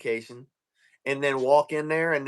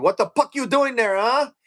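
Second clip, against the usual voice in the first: put-on drill instructor voice, angry, barked, Filipino accent; 10 semitones higher, 6 dB louder than usual. Recalling boot camp, act out your instructor, imitating a pissed-off filipino drill instructor. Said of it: "I had a Filipino drill instructor in boot camp, and he get pissed off".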